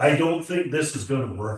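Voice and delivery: play-acted nervous, panicky radio-call voice. Retelling what the pilot closing in behind said on the radio: imitating a panicky voice. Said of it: "in a real panicky voice".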